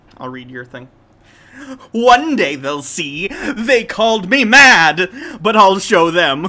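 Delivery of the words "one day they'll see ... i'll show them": booming, loud, slow, drawn-out mad scientist ranting voice. Reading out the given text in the mad scientist voice kids loved. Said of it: "So here's my mad scientist".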